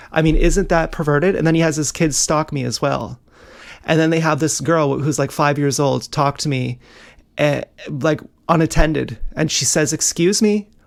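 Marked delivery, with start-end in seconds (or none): 10.0-10.7 "excuse me" said with questioning rising intonation. Retelling what a young girl said, imitating a questioning rise. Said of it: "she's saying it like a question".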